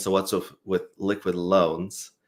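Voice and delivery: normal talking voice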